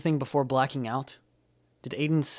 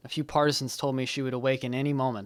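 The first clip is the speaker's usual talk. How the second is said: usual speaking voice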